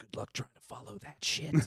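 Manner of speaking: hushed, quiet whisper. Retelling passing a young girl at the therapist's: retelling a whisper. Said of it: "I leaned down and I whispered".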